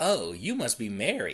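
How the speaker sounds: falsely bright, creepy tone. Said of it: "I'm smiling when I say these things".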